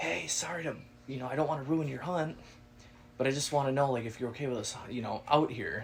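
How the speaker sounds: soft, hushed half-whisper. Retelling approaching a man he had startled: half-whispering. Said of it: "and I whispered".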